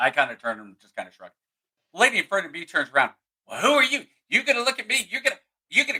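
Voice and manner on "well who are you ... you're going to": very high, furious, angry outburst. Retelling how the lady in front turned around, imitating someone going off. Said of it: "Goes off".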